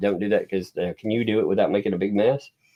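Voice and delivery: ordinary talk, nothing marked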